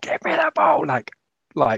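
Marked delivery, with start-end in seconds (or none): 0.0-0.8 mock very high, loud shriek. Retelling a woman in the crowd asking for the ball: imitating a woman screaming.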